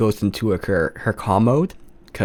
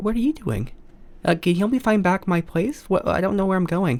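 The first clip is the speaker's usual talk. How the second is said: put-on very high, halting, small little-girl voice; 10 semitones higher than usual. Playing a little girl who seems to be sleepwalking: acting a sleepwalking little girl. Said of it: "play, uh, the little girl right now".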